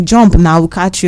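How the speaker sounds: normal talking voice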